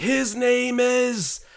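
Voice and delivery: high, fired-up hype yell. Imitating the play-by-play announcer's yell on a hype play: imitating Matt Devlin's hype yell. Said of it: "he's like".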